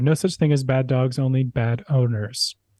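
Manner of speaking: ordinary talk, nothing marked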